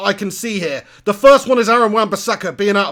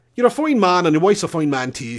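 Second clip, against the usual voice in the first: Irish accent as a party piece. Asked to do an accent, admitting it's not good: put-on Irish accent. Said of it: "That's about my entire limit of doing an Irish accent there".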